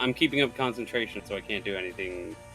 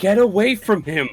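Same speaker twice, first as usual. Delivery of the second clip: acted shout, yelling; 9 semitones higher, 8 dB louder than usual. Voicing a character casting a healing spell in battle: in-character shout. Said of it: "and I shout".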